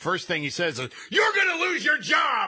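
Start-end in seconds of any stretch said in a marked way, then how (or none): 1.1-2.5 very high-pitched, loud, raging angry yell. Reading a story about a man yelling at an airport worker; mock yelling in Bill O'Reilly voice. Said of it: "He is yelling at a JetBlue worker".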